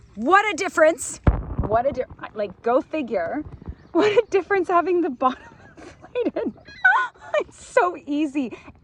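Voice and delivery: talking through bursts of laughter, giggly, high, animated. Speaker who can't stop laughing describes their ride, laughing while talking. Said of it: "I can't stop laughing".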